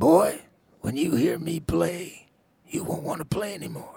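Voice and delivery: very high, loud, rough, raspy voice. Retelling a phone call, imitating Jimmy's raspy voice. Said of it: "Jimmy's voice is, you know, raspy".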